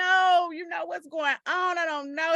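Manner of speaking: acted weeping, pleading cry, high and tearful. Retelling a scene where she pleads at gunpoint: imitating someone crying. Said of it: "She crying like".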